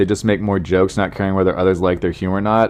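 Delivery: ordinary delivery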